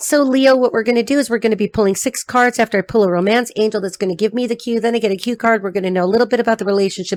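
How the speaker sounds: very fast, rushed, rattled-off run-through. Explaining the card pull for a reading to leo, talking very fast. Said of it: "I'm talking so fast".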